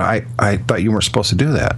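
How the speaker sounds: normal talking voice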